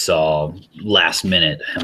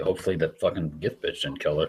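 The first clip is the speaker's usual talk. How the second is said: muttered, much quieter; 8 dB quieter than usual. A character in a told scene mutters to himself, muttering quietly. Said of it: "I just mutter quietly".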